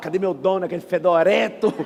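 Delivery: speaking in a dog voice. Acting out a poor man's dog looking for its owner: voicing a poor man's dog. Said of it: "O de pobre fala".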